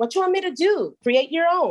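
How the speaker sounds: put-on high, sing-song New York accent, sounds native. Retelling what a woman from new york told her, new york accent. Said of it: "said it like a New Yorker".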